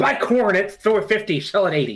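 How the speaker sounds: put-on ranting voice, nonsense sounds. Imitating Boardroom Jimmy ranting nonsense about trading: Boardroom Jimmy voice. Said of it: "He just go".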